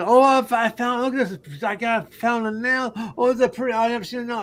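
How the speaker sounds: put-on excited, gushing Southern accent. Retelling a young lady from the South finding things: imitating an excited Southern woman. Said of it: "And she gets all excited".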